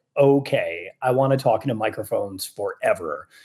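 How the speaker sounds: plain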